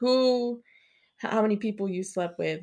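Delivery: ordinary delivery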